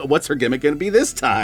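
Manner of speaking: ordinary talk, nothing marked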